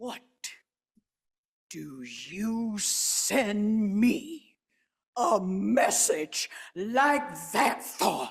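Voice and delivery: fierce voice, barely above whisper. A woman turns back to confront him, in a low, fierce near-whisper. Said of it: "in a low, fierce voice, barely above a whisper".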